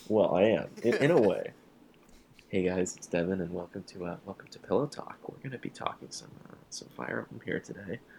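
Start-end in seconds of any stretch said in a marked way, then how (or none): 2.5-8.0 quiet, hushed, faster late-night radio host voice. Opening a Fire Emblem podcast as its host: quiet late-night radio host voice. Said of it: "I sound like a late night radio host right now trying to. Speak quiet".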